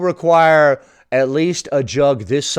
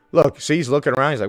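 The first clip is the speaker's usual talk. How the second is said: ordinary talk, nothing marked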